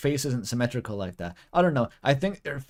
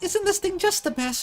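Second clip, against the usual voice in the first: put-on squeaky, very high girly voice. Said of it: "the high-pitched girly voice is not very good".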